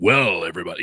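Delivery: put-on super deep voice. Contrasting own voice with a colleague's: imitating Stu's super deep voice. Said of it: "he's got that super deep".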